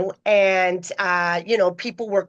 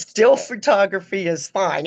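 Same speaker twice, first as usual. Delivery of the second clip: rough-edged, put-on voice. Retelling a talk before going on stage, the speaker quotes a man in his rough voice. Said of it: "And he talked like this. And it was rough".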